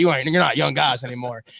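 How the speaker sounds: terrible, rough put-on coach voice. Retelling what the head coach told his linemen: terrible Dan Campbell impression. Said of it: "that was a terrible Dan Campbell impression".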